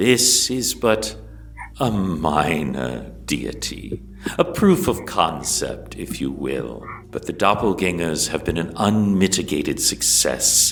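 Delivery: fast, regal, boastful, gloating villain voice, drawn-out minor. Storyteller speaking as Lolth to her maidens, who cry out in joy: Lolth character voice. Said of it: "This marks the era of [name], / [name] turns to her and she says".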